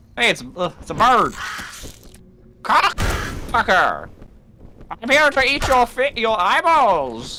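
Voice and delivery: high, slow, swooping cartoon villain drawl. Playing a bird character: Skeletor voice. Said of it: "why I sound like Skeletor".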